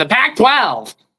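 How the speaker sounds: loud, exaggerated, extremely nerdy voice. Speaker repeats their earlier words for co-hosts, in the most nerdy voice ever. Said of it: "I said in the most nerdy voice ever".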